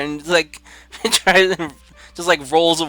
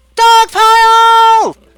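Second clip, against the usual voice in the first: very loud, shrill, high battle yell; 9 dB louder than usual. Voicing a character who throws a fist up: yelling in character. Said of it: "yell, going".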